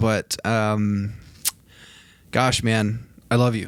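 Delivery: heartfelt voice welling up with emotion. Telling Joel that he will be back, getting a little emotional. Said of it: "I'm getting a little emotional here".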